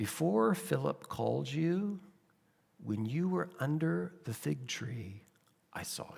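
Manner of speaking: close, low-volume murmur, really quiet and hushed. Picturing one man leaning close to another to speak to him: really quiet voice. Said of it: "say to him in a really quiet voice".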